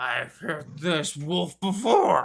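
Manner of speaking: heavily smothered, very muffled ogre voice. A game narrator voices an ogre speaking to a player: very muffled ogre voice. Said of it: "say in a very muffled tone".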